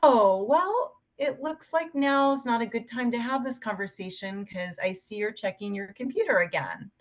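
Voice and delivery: teasing, lightly sarcastic, gentle tone. Showing how to express resentment to a husband with humor: light sarcastic tone. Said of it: "I'm a big fan of sarcasm".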